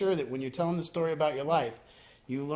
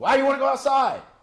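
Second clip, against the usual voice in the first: mock yelling, higher and louder; 10 semitones higher, 10 dB louder than usual. Retelling how he answered a poker player: retelling his own yell. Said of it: "I yell".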